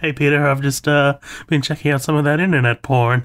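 voice shaking and trembling throughout. Retelling a Family Guy scene, answering Peter; imitating Quagmire's shaky voice. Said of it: "his voice is all shaky".

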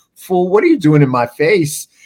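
mock flabbergasted, loud, swooping, disbelieving incredulous tone. Retelling a woman's reaction to a young guy: imitating an incredulous woman. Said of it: "she's just, like, so incredulous".

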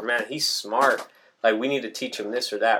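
ordinary talk

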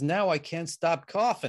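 put-on Boston or New York accent. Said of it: "a Boston or New York accent or something like that".

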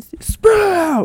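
put-on very high, loud holler. Acting out a film director snapping at a timid co-worker: loud George Lucas impression. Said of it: "the loudest guy you've ever met".

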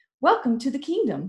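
smiling, warm-hearted tone. A girl weaving flowers welcomes a boy, said with a smile. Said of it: "she said with a smile".

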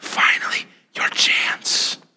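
hushed, breathy whisper. Retelling how David's men urge David on: imitating a whisper. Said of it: "they begin to whisper to him".

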